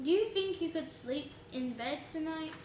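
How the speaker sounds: plain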